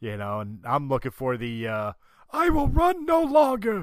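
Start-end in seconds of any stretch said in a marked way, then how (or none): 2.3-3.8 loud, very high-pitched character voice. Showing the version of the character wanted: Forrest Whitaker's Saw Gerrera voice. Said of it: "type Saw".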